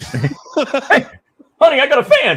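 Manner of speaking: pitch way up, stretched out loud. Imagining Brad Muster watching the show: imitating Brad Muster. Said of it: "He's like".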